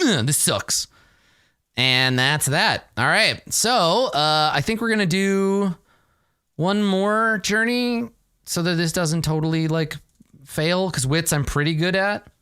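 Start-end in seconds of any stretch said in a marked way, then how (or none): 0.0-0.9 pouting, sulky, pouty grumbling tone. Recounting going to bed after a bad turn, the speaker is retelling a pout. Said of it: "I pout and I'm like".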